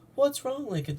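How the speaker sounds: small, high-pitched little voice.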